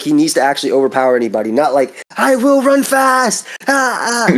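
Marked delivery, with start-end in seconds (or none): 2.2-4.4 very high, very slow, drawn-out scream. Mocking a character who screams at everything: imitating Asta screaming. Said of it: "this dude was screaming for every single".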